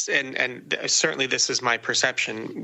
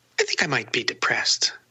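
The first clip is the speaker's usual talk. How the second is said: mock offhand, cavalier, flippant tone. Retelling what a man said over breakfast, imitating a cavalier tone. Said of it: "said it in a very cavalier kind of way".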